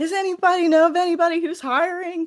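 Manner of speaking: very high, mock, called-out yell. Retelling how a professor yelled out to the costume house: imitating someone yelling. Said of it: "she yelled out".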